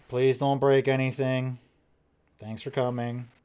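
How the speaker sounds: toneless, flat, level droning monotone. Narrator voices the woman behind the counter as the door opens, flat monotone. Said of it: "same monotone".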